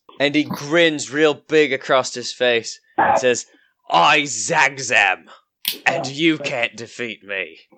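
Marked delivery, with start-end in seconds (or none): 3.9-7.5 put-on pirate voice, slower. Game narrator voicing an enemy who just knocked the player backwards: Jack Sparrow-like voice. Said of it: "He sounds like Jack Sparrow".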